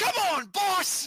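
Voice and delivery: very high, shrill, loud orc shout. Voicing orcs calling out amid the pandemonium: orcs calling out. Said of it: "you can hear a few of the orcs call out".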